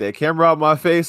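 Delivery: high-pitched voice, talking through laughter. Retelling what someone said on camera: imitating someone laughing while talking. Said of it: "like, laughing".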